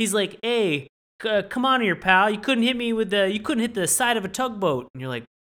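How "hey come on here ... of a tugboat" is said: put-on Jersey New York accent, much higher, louder. Retelling a man harassed by fishermen talking back: Jersey New York accent. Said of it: "That's got a like a Jersey, New York accent".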